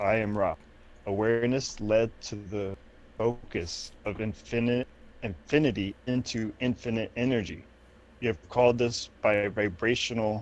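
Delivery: ordinary delivery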